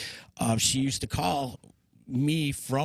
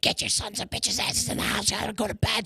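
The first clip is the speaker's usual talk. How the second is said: high, screamed voice; 8 semitones higher than usual. Retelling the night of an explosion: imitating Grandma screaming at them. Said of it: "She starts screaming at us".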